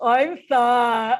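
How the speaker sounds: loud, goofy, really silly put-on voice. Showing how to say a self-judgment, fingers up nose: really silly voice. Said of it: "in a really silly voice".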